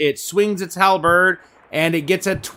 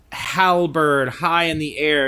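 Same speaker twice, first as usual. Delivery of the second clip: usual speaking voice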